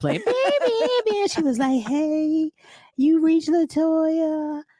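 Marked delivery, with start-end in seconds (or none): 1.8-4.6 very high, little, sweet, sexy, drawn-out voice. Retelling the pager greeting he heard when he called: imitating Latoya's sweet voice. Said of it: "the little sweet voice".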